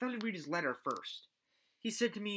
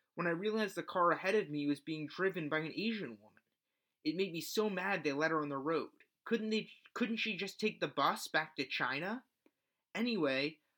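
normal talking voice

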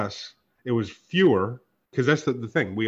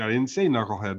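plain

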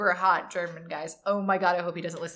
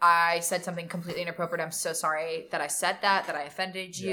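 normal talking voice

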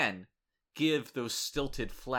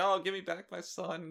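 play-acted, high, weepy, sobbing plea; 8 semitones higher than usual. Retelling how the predator on the ground reacted as an officer took the kid: imitating someone crying. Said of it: "the predator's on the ground just crying like".

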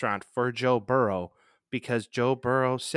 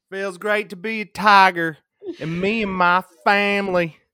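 fake Southern accent, raised, high and loud; 8 semitones higher, 8 dB louder than usual. Imitating the coach announced at a basketball game: Brian Kelly fake Southern accent. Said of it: "put on a fake Southern accent".

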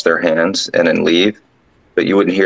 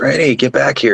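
high, raised, shouted yell; 8 semitones higher than usual. Retelling how a man yelled after a trainee walking away, retelling a yell. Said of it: "So he yells".

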